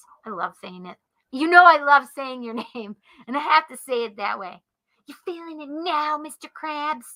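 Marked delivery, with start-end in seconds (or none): 5.1-7.0 put-on cartoon character voice. Saying a line the speaker loves saying in a SpongeBob voice. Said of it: "it's not the best SpongeBob impersonation".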